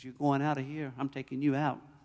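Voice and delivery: deep, very quiet, threatening devil voice. Retelling a morning headache when the devil spoke to him, in a devil's voice. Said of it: "Devil says".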